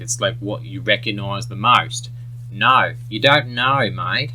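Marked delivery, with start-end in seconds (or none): 2.5-4.3 put-on Australian accent, Australian O in know. Teaching how to do an australian accent, demonstrating it in an australian accent. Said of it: "you almost can't do an Australian accent".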